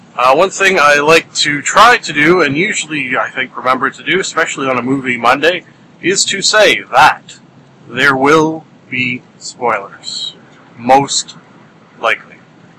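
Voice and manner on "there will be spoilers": slow, drawn-out for emphasis. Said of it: "say it slowly to really, uh, really stress it".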